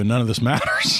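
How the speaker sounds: normal talking voice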